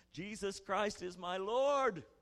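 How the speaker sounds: put-on shouting. Retelling bursting in on friends playing cards: retelling own shout. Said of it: "I shouted at them".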